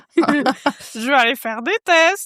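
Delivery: mocking, teasing, high and drawn out. Repeating the other speaker's line back: mocking imitation of the other speaker. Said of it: "qui prend la phrase la plus sensible".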